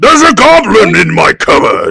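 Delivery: put-on booming, creaky old monarch voice. Trying out how King Charles might sound finding a goblin: King Charles voice. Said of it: "what does his voice sound like?".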